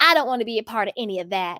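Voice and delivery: badly done, butchered put-on Southern accent. Speaker quotes a woman's explanation, doing a bad southern accent. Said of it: "Sorry if I'm butchering her southern accent".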